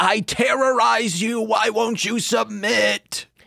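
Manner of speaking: high gritty scream. Retelling a wrestling episode, a wrestler threatening a rival: imitating someone screaming. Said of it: "And he's screaming".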